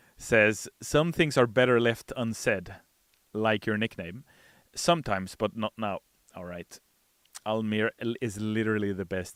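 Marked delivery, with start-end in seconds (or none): none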